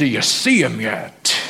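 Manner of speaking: Southern preacher style pulpit delivery. Repeating a question to listeners during a sermon, southern preacher voice. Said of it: "I sound like a southern preacher".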